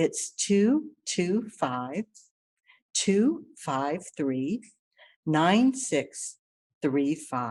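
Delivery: talking slowly. Repeating a phone number so the listener can write it down, talking slow. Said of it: "I'm talking slow because I write slow".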